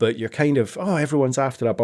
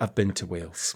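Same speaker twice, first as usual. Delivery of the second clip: put-on deadpan, morose voice, lower and quieter; 5 semitones lower, 8 dB quieter than usual. Quoting a character's reply from the show: deadpan, morose Christine voice. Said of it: "Just the way".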